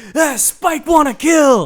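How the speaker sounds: riled-up brute voice, high and very slow. Retelling a movie locker-room scene, imitating riled-up Spike. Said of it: "they're getting Spike riled up".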